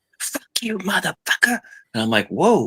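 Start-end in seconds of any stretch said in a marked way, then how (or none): 0.2-1.6 put-on shrill, very high, drunken screaming. Telling a story, the speaker acts out a drunk woman on a bench, imitating her yelling. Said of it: "she's yelling and screaming".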